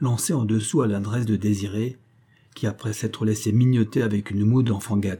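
ordinary delivery, nothing marked

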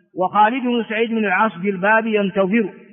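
normal talking voice

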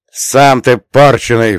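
with a snort. The narrator snaps back at the frightened water spirit, snorting. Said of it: "фыркнул я".

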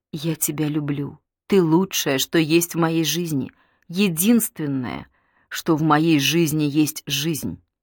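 ordinary delivery

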